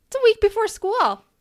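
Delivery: cheery, high-pitched, loud call. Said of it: "be like".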